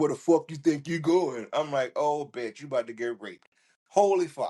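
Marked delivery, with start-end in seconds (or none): 0.0-1.5 sudden switch to a full man's voice. Retelling how a woman grabbed his friend by the arm, full-on man voice. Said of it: "in full on man voice".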